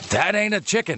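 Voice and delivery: put-on New York accent. Voicing a man on the street, in a new york accent. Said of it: "You're going to read this as New Yorker man on the street".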